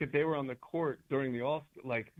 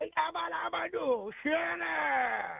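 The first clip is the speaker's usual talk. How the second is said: very high, slow, creaky, croaky voice; 13 semitones higher than usual. Answering with a competing impression, Adam Sandler impression. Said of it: "That was better".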